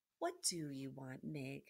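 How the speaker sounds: soft, low, gentle, soft-spoken delivery. The princess answers someone who keeps sobbing, softly. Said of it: "said the princess softly".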